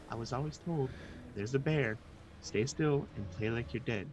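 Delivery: soft, very quiet, hushed, under-the-breath voice. Speaking in character to a companion near a bear: real quiet voice. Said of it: "real quiet".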